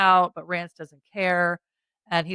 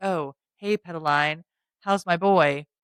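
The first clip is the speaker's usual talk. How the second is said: put-on smug tone. Retelling a scene where an armed man barges in: smug, imitating a character. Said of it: "he's all smug".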